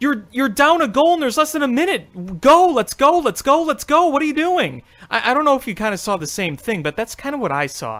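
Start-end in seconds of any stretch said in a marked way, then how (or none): 0.0-4.8 mock urgent, high, loud, frustrated yelling. Retelling yelling at the TV during the game: imitating own screaming at the TV. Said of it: "I was screaming at the T V".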